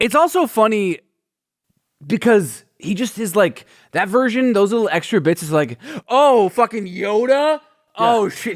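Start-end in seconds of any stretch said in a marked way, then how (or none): 6.1-8.5 slow, drawn-out mocking delivery. Retelling how the Emperor learns Luke was trained by Yoda: mocking Emperor impression. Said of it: "He becomes like a, like a roasting comedian".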